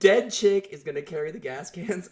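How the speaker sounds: acted, high-pitched scream in disbelief. Recapping a show, the speaker reenacts their reaction, retelling screaming at the TV. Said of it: "I am screaming at the TV like".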